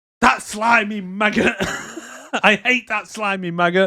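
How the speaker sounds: shrill, very high, full-lung top-of-lungs yell. Retelling the scene where Bill shouts once the policeman leaves: imitating Bill shouting at top of lungs. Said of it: "Bill shouts at the top of his lungs".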